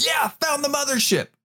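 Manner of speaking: mock very high shouted call. Retelling finding where the roots and bulbs come from: imitating own past yell. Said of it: "You actually yelled that out?".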